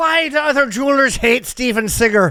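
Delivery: put-on Irish accent, loud and high. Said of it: "There's no reason to do an Irish accent".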